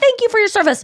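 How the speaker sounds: very high, overdone, put-on sincere, earnest grateful tone. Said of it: "and she's like".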